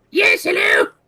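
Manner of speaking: very high, shrill, very loud goblin voice. Voicing the rumor monger answering a player's greeting: goblin-y voice. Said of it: "he had the goblin-y voice".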